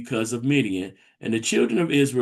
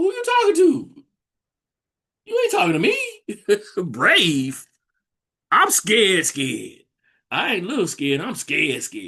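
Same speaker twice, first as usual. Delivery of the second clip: put-on disbelieving man's voice, higher pitch; 8 semitones higher than usual. Retelling Gideon answering the messenger: imitating Gideon looking around. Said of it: "he looking around like".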